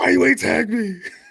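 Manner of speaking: put-on angry voice. Complaining to the other speaker about not being tagged, like a mock angry girlfriend. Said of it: "very angry girlfriend right now".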